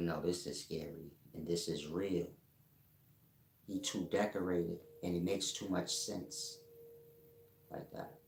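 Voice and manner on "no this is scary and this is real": ordinary talk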